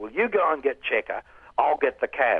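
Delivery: loud, fake put-on American accent. Quoting a man's answer to the speaker's problem, in his fake American accent. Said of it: "with his fake American accent".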